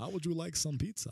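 campy, high-pitched put-on vampire voice. Speaker says the line again in their vampire voice. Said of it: "that was my vampire job again".

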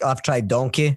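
usual speaking voice

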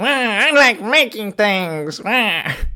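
wild, bouncy, high, swooping, big cartoonish character voice. Reading a quote aloud for a guessing game as asked: Wario voice. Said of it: "can you do a Wario voice?".

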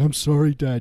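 mock crying, high, loud and blubbering. Teasing the other speaker about their dad yelling instructions, imitating them crying. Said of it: "You're crying".

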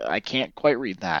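ordinary delivery

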